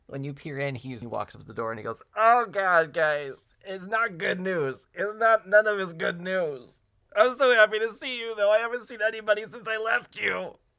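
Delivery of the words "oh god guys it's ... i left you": very high, loud, slow, drawn-out ugly crying. Frankie, a little hot dog, greets old friends at the door, Frankie ugly crying. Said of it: "he's ugly crying".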